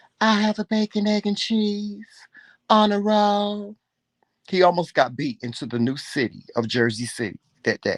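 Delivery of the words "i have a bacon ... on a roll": slow, small, put-on flirty voice. Imitating the husband, a big flirt, doing Joseph's little flirty voice. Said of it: "he does this little voice".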